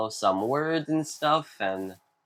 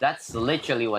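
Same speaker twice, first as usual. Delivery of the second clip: plain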